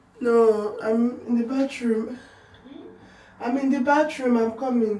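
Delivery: very loud, high, tearful, crying while talking. Calling out from the bathroom to someone who asks for them, crying while talking. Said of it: "Why are you crying?".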